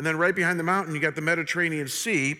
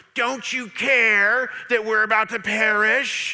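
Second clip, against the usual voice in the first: high, biting, drawn-out, very sarcastic tone; 5 semitones higher, 5 dB louder than usual. Retelling how the disciples woke Jesus: imitating a very sarcastic remark. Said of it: "they say to him very sarcastically".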